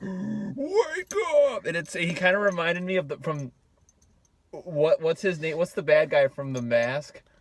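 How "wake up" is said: very high, devil-like shout. Retelling a movie scene, voicing the possessed character: imitating Devil Tom Cruise shouting. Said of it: "Devil Tom Cruise".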